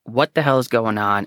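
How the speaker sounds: ordinary talk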